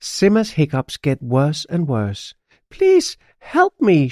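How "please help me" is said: very high, shrill, yelling shout. A character with worsening hiccups begging for help, shouting. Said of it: "she shouts".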